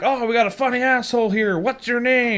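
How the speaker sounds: high, screaming drill-sergeant voice. Mocking Dale as a drill sergeant asking your name: imitating Dale screaming. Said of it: "screaming out".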